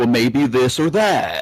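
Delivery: mellow, laid-back tree-hugging hippie voice. Describing how a character sometimes talked during the season, laid-back hippie voice. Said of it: "he would be like".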